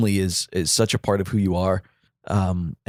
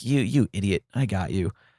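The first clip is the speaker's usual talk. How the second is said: put-on laughing through words; 3 dB quieter than usual. Retelling what an aunt said to a scared woman, imitating laughing while talking. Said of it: "just starts laughing at her".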